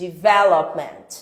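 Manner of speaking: stress on second syllable of development. Teaching English word stress in Portuguese, stress on second syllable of development. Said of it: "a sílaba tônica é a segunda. Sílaba tônica, sílaba forte é a segunda".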